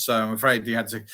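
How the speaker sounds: usual speaking voice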